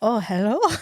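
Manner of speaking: mock creepy, weird put-on voice. Retelling a scene where a character talks to unconscious women: imitating a creepy, weird voice. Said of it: "talk to in the creepiest, weirdest way possible".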